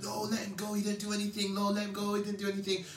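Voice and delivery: mock crowd screaming in commotion, high and screamed. Retelling a crowd at an airport shouting to let him go, imitating people screaming. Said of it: "loads of people in the airport screaming".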